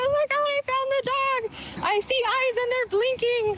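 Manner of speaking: put-on excited high voice. A rescuer recounts finding the dog, reenacting their high-pitched excited voice. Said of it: "I got a really high pitched, excited voice".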